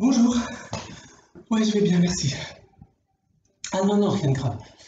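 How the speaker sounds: out of breath, winded. Answering a call from Valérie while climbing six flights of stairs, out of breath. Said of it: "Je suis essoufflé".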